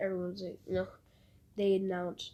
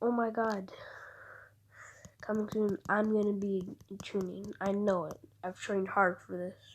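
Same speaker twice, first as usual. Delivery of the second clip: ordinary talk, nothing marked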